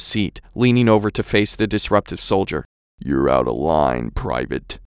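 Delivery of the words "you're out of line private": very deep, very low husky baritone rumble. Reading a story aloud, the sergeant's line: husky baritone voice. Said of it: "in his husky baritone".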